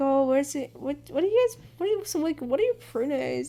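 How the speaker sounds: mock, extra nice, really sweet tone. Retelling own words to an EMT, imitating own sweet tone. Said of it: "real sweet about that".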